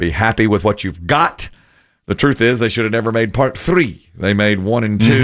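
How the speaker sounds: normal talking voice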